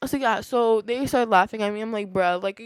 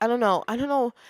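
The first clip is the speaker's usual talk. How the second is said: plain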